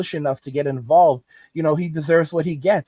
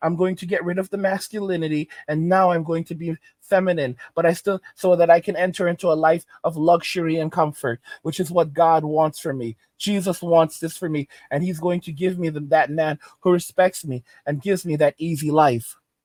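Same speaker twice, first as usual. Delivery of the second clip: ordinary delivery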